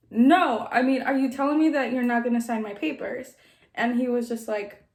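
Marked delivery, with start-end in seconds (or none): none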